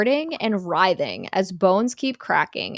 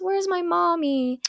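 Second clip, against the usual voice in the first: put-on high, slow small boy voice. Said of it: "a small boy goes".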